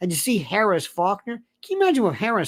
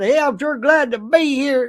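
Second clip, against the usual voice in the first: fake, laid-on Southern accent, pitched up; 6 semitones higher, 6 dB louder than usual. Speaker demonstrating what a southern accent really sounds like: put-on southern accent. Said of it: "It wasn't Southern".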